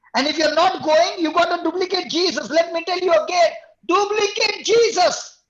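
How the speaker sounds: all-out, high, loud preacher-style scream. Talking with others about Jesus of Nazareth, the speaker is screaming. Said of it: "I don't know why I'm screaming".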